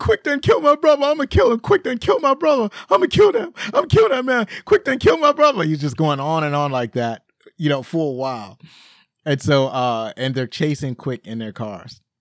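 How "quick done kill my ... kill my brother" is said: mock very high, loud, nonstop sobbing whine. Retelling a film scene, imitating the crying man: mock crying and whining. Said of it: "He's crying, is just constant crying and whining. He's like".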